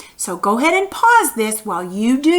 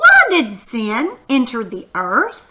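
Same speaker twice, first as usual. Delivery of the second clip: upward rising tune on earth. Speaker leads listeners in repeating a question together, questioning rise. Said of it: "Did you hear my voice?".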